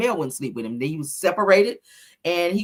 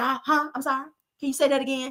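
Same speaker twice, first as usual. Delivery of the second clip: mocking, feigned confused delivery; 7 semitones higher, 4 dB quieter than usual. Mocking someone who acted like they could not hear questions: imitating someone pretending not to hear. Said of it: "you couldn't even hear when Melody was asking you questions".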